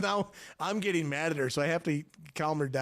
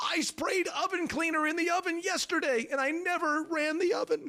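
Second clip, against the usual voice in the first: mock hysterical panicked voice, pitched higher; 14 semitones higher than usual. Retelling his wife's confession about the oven cleaner: imitating wife's hysterics. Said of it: "Italian hysterics".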